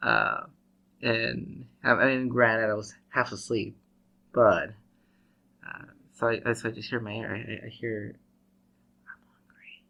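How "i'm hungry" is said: barely voiced, breathy, hushed whisper. Retelling a voice heard in the ear while half asleep: imitating a whisper. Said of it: "somebody, like, whispering in my ear".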